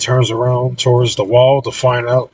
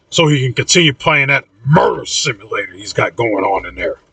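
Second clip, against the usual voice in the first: ordinary delivery, nothing marked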